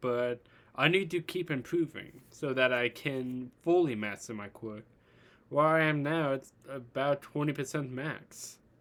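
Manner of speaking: ordinary talk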